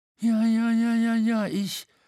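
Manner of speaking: stuttering, faltering. Reading a character's reply about someone who has vanished, stammering. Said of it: "stammelte der Wiederhol".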